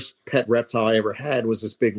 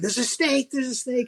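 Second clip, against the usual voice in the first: very high-pitched fake, pretend shout. Retelling faking a snake catch in the front yard: imitating own past yelling. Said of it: "I started yelling".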